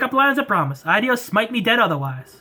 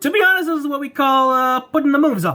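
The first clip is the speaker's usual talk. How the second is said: put-on Brooklyn accent; 4 semitones higher than usual. Voicing an energetic guy in a game, brooklyn accent. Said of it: "Brooklyn accent is staying".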